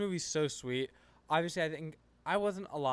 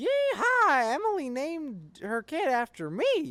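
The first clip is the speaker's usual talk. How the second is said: awful put-on voice, very high, loud, slow, swooping, drawn out; 10 semitones higher, 7 dB louder than usual. Acting out a scene from the show: bad Jesse voice. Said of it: "That's actually the worst Jesse voice of all time".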